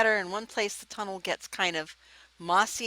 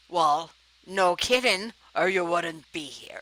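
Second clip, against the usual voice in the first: louder, grouchy dwarf character voice; 4 dB louder than usual. Voicing a dwarf answering someone who asks for weapons and armor: grumpy dwarf voice. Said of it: "this would be Grumpy".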